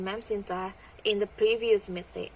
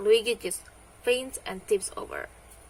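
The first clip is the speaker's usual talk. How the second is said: usual speaking voice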